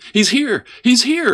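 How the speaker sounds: shrill, high, giddy exclamation. Narrator reads Gladys as she throws open the door for her brother, exclaiming. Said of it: "exclaimed Gladys".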